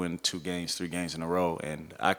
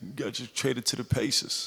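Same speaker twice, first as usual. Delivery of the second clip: put-on New York accent with a raised, higher pitch; 6 semitones higher than usual. Retelling what Jay told him after he landed, in Jay's New York accent. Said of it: "so he got the New York accent".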